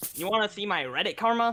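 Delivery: put-on slightly nasal high-school kid voice. Showing the voice others use when imitating him: nasal high-school reddit kid voice. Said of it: "yes, that exact vocal".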